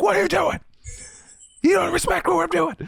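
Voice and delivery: very high, raspy angry fifties dad voice. Retelling snapping at a then girlfriend over noise: imitating an angry 1950s dad. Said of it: "I sound like a, uh, like a, like an angry dad in the fifties".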